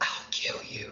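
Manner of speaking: hushed, very quiet whisper, barely voiced. A player speaks as their character to another character, whispering. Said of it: "I put my hand on his shoulder and I whisper".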